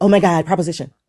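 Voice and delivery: animated, exasperated, frustrated outburst. Quoting the other speaker's outburst back to them: imitating a frustrated outburst. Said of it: "you were getting frustrated with".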